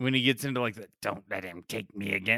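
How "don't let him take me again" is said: low, quiet, soft sinister pleading tone. Acting out him still pleading while setting Peter up for the glider attack, in a Goblin voice. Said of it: "he shifts back into Goblin voice".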